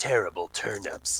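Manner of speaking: glowering, hushed mutter under the breath. Muttering a battle line at a wight: glowering under breath. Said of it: "under my breath I glower and say".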